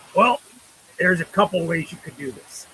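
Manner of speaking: smoke-roughened, gnarled smoker's rasp. Retelling what a friend's dad said about the dice: imitating a cigarette-gnarled voice. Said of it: "with his cigarette gnarled voice and says".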